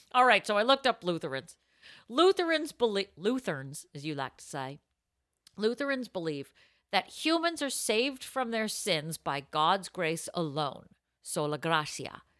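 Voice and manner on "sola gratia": put-on Italian accent, lower and quieter. Reading Lutheran beliefs aloud to another host, saying the Latin in an Italian accent. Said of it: "I'm doing it with an Italian accent".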